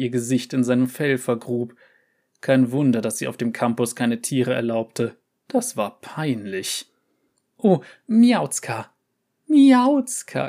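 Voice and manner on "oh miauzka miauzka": high, loud, gurgling chuckle through the words. The dean strokes a cat while making kissing sounds, chuckling. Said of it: "gluckste die Dekanin".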